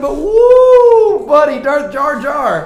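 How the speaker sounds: loud yelling. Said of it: "I'm not trying to scream into the microphone".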